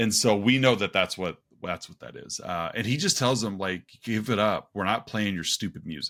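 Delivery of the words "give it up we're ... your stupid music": mock dismissive, brushing-off tone. Retelling a film scene, quoting a character: imitating a dismissive retort. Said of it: "very dismissive".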